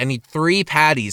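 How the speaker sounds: ordinary talk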